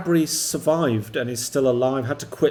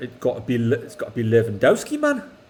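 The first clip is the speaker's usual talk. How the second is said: put-on Geordie accent; 2 semitones lower than usual. Asked to pick Lewandowski or Mbappe in a Geordie accent; Geordie accent. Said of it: "say it in a Geordie accent".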